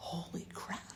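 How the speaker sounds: soft, whispered, shocked tone.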